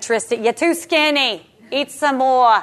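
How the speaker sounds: slow, put-on New York accent. Describing East Coast relatives, the speaker quotes them: put-on New York accent. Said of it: "they talk like this".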